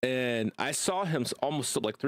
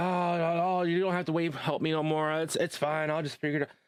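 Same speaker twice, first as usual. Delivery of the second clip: mock panicked, frantic-sounding voice; 3 semitones higher than usual. Retelling helping Tommy up the stairs, speaker imitates Tommy panicking. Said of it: "he started started panicking".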